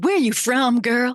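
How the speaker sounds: put-on casual, relaxed Southern US accent. Retelling what people in the south asked: southern accent. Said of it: "in the Southern accent".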